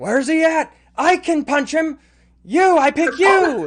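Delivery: shrill, gruff, very high, very loud dwarf bellow. Voicing a dwarf mercenary commander calling out from inside: dwarf commander yelling. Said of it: "the dwarf commander of the, the mercenaries, yell".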